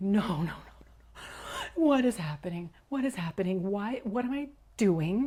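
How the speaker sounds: acted-out, reenacted sobbing. Speaker retells a past moment with a powerful man, acting out sobbing. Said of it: "And I'm sobbing".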